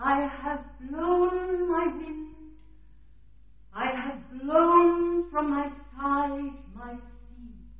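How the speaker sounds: unhurried, slow, unrushed pace.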